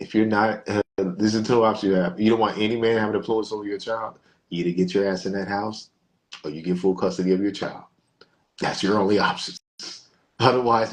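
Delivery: ordinary talk, nothing marked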